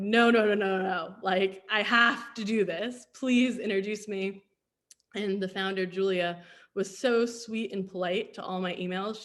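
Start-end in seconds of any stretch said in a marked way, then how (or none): 0.0-4.4 put-on pleading, louder. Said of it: "I basically just kept begging and pleading".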